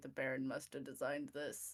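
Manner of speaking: soft, murmured under-the-breath mutter. Speaking in character while looking up at a large library: muttered under breath. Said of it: "Under my breath, I look up at that and say".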